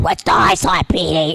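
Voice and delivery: rough, scratchy cartoon character voice. Voice actor showing his most challenging character, scratchy Froggy voice. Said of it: "it's really scratchy".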